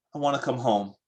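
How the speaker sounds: mock-tearful, sniffling, put-on crying voice. Speaker acting out a 2:45 a.m. phone call: imitating a tearful caller.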